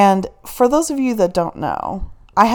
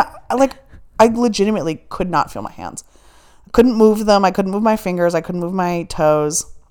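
ordinary talk

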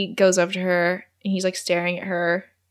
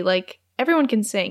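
ordinary delivery

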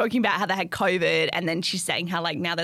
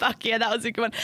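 ordinary talk

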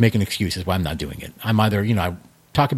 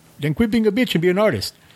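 very high, bad, horrible put-on Jamaican accent; 11 semitones higher than usual. Quoting what a man said back to him, in a really horrible Jamaican accent. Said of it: "I'm going to do a really horrible Jamaican accent".

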